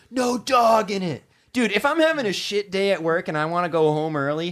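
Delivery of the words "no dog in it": slow, emphatic, loud, drawn-out yell. Recalling the listener's dad yelling at him as a kid, retelling a yell. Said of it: "him yelling".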